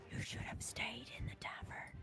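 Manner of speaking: fast, menacing near whisper. Game master voicing a creature right up in a player's face, almost whispering. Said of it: "almost whisper".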